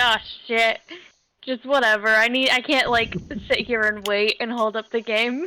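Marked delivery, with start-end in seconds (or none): none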